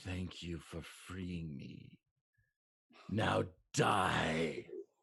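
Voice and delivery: slow undead creature voice, "die" drawn out. Voicing a pale corpse-like thing that stands up after a player taps it: voicing a corpse-like creature. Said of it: "it says".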